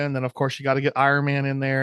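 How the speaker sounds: usual speaking voice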